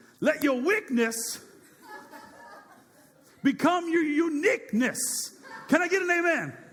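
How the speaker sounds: very slow, very high Southern preacher voice. Speaker retries a motto on the audience in a southern gospel preacher voice. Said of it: "I'm going to get all Southern gospel uh, preacher on you".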